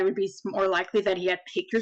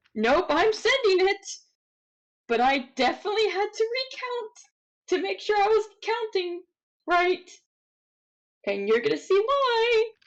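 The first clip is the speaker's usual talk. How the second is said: worried, concerned tone, higher; 12 semitones higher than usual. Explaining a worrying dice roll to another player: genuinely concerned voice. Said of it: "You can tell by my voice, I am genuinely concerned".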